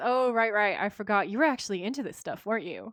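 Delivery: needling, teasing big-sibling ribbing tone. Retelling a scene where Dean teases Sam about magic: imitating Dean's teasing big-brother tone. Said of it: "In the tone of a big brother who's about to torture a little brother".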